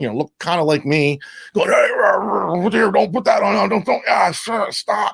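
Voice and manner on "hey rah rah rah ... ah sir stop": mock grumpy big guy, rough, drawn-out grumble. Retelling a grumpy sound guy stopping an opening act's setup: imitating a grumpy angry man. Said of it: "you get this grumpy big dude".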